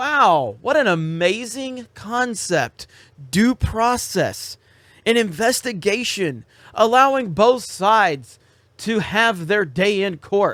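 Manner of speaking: heavy, mocking sarcasm throughout. Addressing Nike about due process and an investigation: sarcastic. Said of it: "I'll kinda drop the sarcasm".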